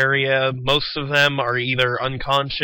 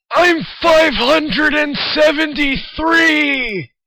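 put-on old man voice, much higher and louder; 14 semitones higher, 5 dB louder than usual. A game narrator voices a young-looking man who sounds old, old man voice. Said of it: "Why do you sound like you're 80?".

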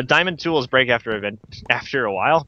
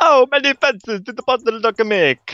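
put-on Italian accent, much higher pitch; 11 semitones higher, 3 dB louder than usual. Gaming with a teammate and counting fences, a failed Count von Count impression. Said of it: "I ended up just sounding Italian".

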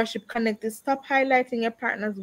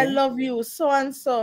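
ordinary talk

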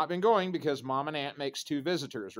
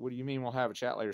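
put-on scared voice, quieter, faster; 4 dB quieter than usual. Retelling the sister's reply to being told they'll chat later, imitating her scared tone. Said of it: "my sister got that scared tone in her voice".

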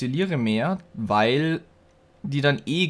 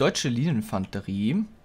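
ordinary talk, nothing marked

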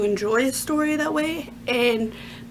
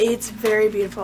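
plain

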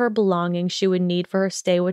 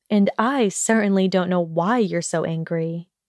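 ordinary delivery

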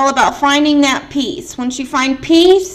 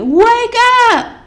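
put-on, very high-pitched scream; 9 semitones higher, 3 dB louder than usual. Retelling what a woman screamed at them, the speaker retells a scream. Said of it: "She's like screaming at me".

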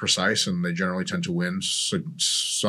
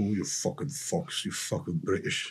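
whispered, fake, put-on British accent; 7 dB quieter than usual. Imagining how a bodybuilder talks: put-on British accent. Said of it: "I need to work on my British accents".

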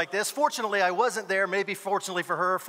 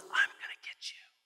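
hushed, menacing, threatening whisper. Retelling how a mother pointed at a daughter: imitating a whispered threat. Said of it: "the mom points to my daughter and whispers".

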